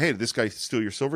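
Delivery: normal talking voice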